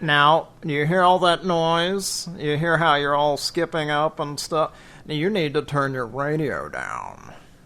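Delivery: scolding radio-host voice, pitch swooping up and down. Scolding a caller for having their radio on, Art Bell impersonation. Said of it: "that was my Art Bell impersonation of s-, scolding someone for having their radio on".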